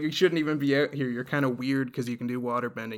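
ordinary talk

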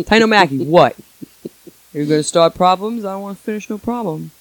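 Long Island bar bouncer-type accent. Playing a bouncer at a Long Island Irish bar confronting Titan O'Mackey, Long Island bouncer voice. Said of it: "That's a Long Island Irish bar".

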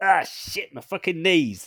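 sudden yelp of pain. Narrating a story, a character bangs his knees on armor: pained exclamation. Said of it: "He accidentally exclaims as he clangs his knees".

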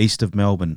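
usual speaking voice

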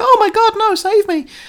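put-on very high, loud, helpless, innocent girl-like pleading cry. Retelling a film scene, imitating the daughter: Eliza Dushku impression pleading innocent girl. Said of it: "she suddenly has to sort of plead innocent girl".

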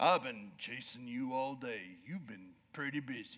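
very low, slow, calm, unhurried western drawl. The speaker retells what a man who'd been chasing him all day said, retelling a slow, calm drawl. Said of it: "that slow, calm drawl".

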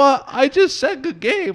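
innocent, incredulous tone.

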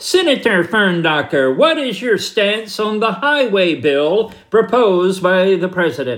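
nasal Northeastern American reporter tones, through the nose. Acting out a Washington Post reporter questioning a senator, in Stanley Klinger nasal tones. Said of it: "in his best Northeastern liberal nasal tones".

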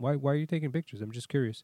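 acted easygoing, calm, courteous tone. Retelling asking a tow truck driver about photos: imitating a calm polite question. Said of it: "with a perfect tone".

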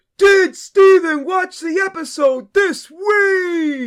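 very high, slow poor impersonation, stretched "week". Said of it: "That was my [name]".

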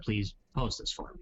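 ordinary talk, nothing marked

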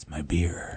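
whispered, breathy character voice. Imitating how a movie character would say a line: Snake Plissken voice. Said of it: "the Snake Plissken version would be more like".

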